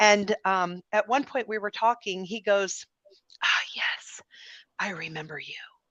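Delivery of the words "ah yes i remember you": breathy, hushed, confiding whisper. Recounting a backstage talk, quoting a man who remembers him: imitating a whisper. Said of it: "and he's whispering now".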